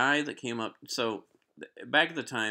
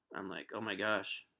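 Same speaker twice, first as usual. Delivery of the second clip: ordinary delivery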